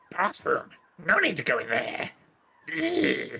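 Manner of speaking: put-on, high, swooping, sing-song goblin voice. Narrating a game scene, Nuknak closes the door and turns to Lid: goblin voice. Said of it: "My goblin voice is verging on Yoda".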